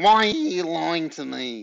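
every word through the nose. Reading a story aloud, voicing Mr. Parker confronting Ben in a very nasal voice. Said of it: "he also had a very nasal voice".

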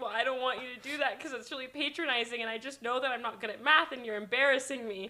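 ordinary talk, nothing marked

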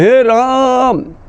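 high, slow, called-out voice.

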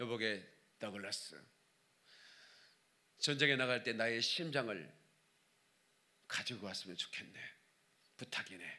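low, hushed, weak dying king voice.

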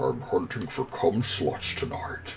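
whispered, breathy, half-whispered delivery. Voicing the chaser while playing a game: sounds like Sean Connery. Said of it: "You just sound like Sean Connery".

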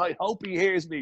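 light, acted-out half-shout. Recounting a snooker match, retelling how Eamon shouted at the wall: imitating Eamon shouting. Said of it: "And he shouts at the wall".

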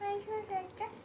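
put-on child voice. Asked to do the child's voice while play-acting, in a child voice. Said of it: "ไหนทำเสียงเสียงเด็ก".

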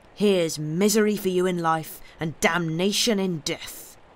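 ordinary delivery

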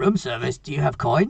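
put-on high-pitched goblin creature voice. A storyteller voicing a goblin peering up from behind a door, goblin voice. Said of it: "this goblin ... And says".

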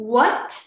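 "what" gliding from low to high, rising second tone. Explaining the second tone, saying what with a rising second tone. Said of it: "you start your sound from the bottom to the high pitch. So it's the second tone".

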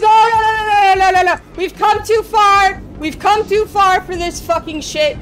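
panicked screaming. Streamer reacting while playing a game: screaming in panic. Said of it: "I've never heard you scream like that before".

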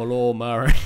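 put-on loud, poorly done Austrian accent. Retelling what one boyfriend said: bad Arnold Schwarzenegger accent. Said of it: "That was a really bad Arnold".

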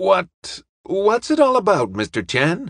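stammering, stuttering. Benbow, packing up the projector, asks Mr. Chan, stammering. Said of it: "he stammered".

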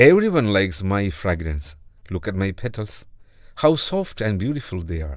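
ordinary delivery

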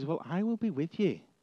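put-on gentle, soft, caring fatherly tone. Acting out God reassuring a doubtful Moses: caring, fatherly tone. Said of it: "in a really caring, fatherly sort of way".

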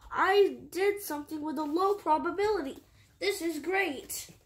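plain reading voice

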